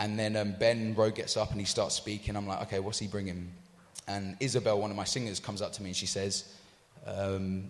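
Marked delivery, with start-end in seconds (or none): none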